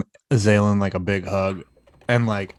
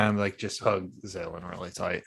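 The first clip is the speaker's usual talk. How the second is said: ordinary talk, nothing marked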